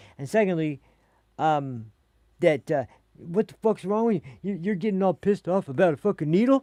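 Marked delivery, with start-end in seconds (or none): 3.2-6.6 play-acted, absolutely furious, pitched-up outburst. Retelling what an angry coworker said after learning of the complaint: imitating a furious man. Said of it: "absolutely furious with me".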